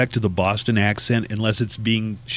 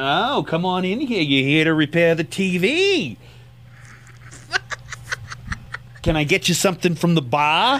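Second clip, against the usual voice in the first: put-on Boston accent; 7 semitones higher than usual. Imitating a blonde woman greeting the tv repairman: boston accent. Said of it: "she's got this Boston accent".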